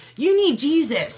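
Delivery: high mock yell. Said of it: "he yelled one more time".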